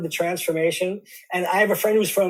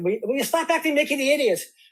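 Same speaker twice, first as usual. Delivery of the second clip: put-on Irish accent with raised pitch; 7 semitones higher than usual. Asked to hear it, speaker quotes what their mother would say, in a put-on irish accent. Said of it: "I can go into my Irish accent".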